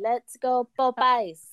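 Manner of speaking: put-on cheerful, light, slight French accent. Speaker retells joining the crowd's cheer at a ribbon cutting, in a little french accent. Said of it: "I like the little French accent in there".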